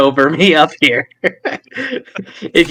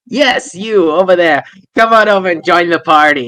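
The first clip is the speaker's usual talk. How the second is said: put-on drunken voice; 2 semitones higher than usual. Voicing a character calling a kid over: acting drunk. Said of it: "my drunken state here".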